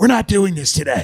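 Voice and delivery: rasping, throaty voice. Retelling a mayor's answers at press conferences: imitating Lori Lightfoot's raspy guttural voice. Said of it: "raspy, guttural voice".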